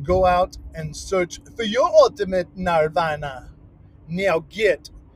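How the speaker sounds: put-on Jamaican accent. Signing off a biking video to viewers, in a put-on jamaican accent. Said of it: "that is my Jamaican accent".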